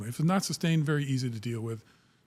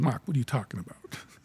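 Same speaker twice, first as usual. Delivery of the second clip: put-on Boston accent. Retelling how the chief, Brad, replied to him: Brad's Boston accent. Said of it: "his Boston accent".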